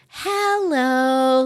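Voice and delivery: high-pitched hello with the word drawn out long. Showing how a children's show host greets kids: Miss Rachel voice. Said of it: "that's how she talks".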